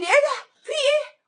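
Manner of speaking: high, loud panicked freak-out.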